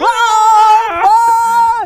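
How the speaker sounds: very loud, very high scream.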